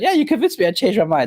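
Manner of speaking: high, sarcastic, pretend-agreeable tone. Retelling a reply to a commenter's argument, retelling a sarcastic reply. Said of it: "I was being sarcastic".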